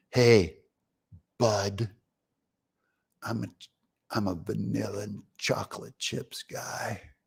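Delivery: low, very hushed, barely audible tough-guy voice. Retelling what Joe said, putting on his tough guy voice. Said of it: "I got to get my tough guy voice on here".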